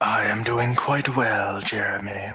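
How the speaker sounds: smooth, soothing put-on voice. Introduced last, greeting jeremy back in a smooth, soothing voice. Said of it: "It's very smooth. That voice".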